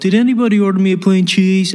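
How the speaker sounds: really bad put-on little-kid voice. Speaker recalls Kevin's pizza scene in Home Alone, bad Kevin McCallister impression. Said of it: "really, really bad impression".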